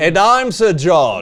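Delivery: put-on, fake British accent. Greeting viewers at the start of the show: put-on British accent. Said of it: "accent to the actors".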